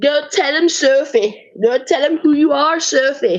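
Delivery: makeshift fake Scottish accent. Retelling a scene where a character urges sophie: put-on scottish accent. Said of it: "That's my accent".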